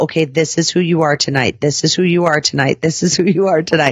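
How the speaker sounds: usual speaking voice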